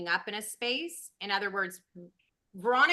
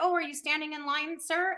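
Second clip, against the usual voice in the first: sweet, kind, polite tone, higher; 7 semitones higher than usual. Retelling asking a man in a Starbucks line a question: retelling asking kindly, sweetly. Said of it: "And very kind, very sweet".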